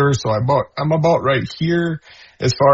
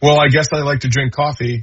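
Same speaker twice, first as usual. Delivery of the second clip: as sarcastic as it gets, heavy sarcasm. Retelling their reply to her question, retelling own sarcastic reply. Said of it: "I just said very sarcastically".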